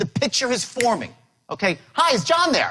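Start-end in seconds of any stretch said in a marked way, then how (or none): 1.9-2.7 excited, upbeat, eager, enthusiastic, pitched-up voice. Teaching how to make phone calls, demonstrate asking for someone, excited and upbeat. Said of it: "I'm excited. I'm upbeat".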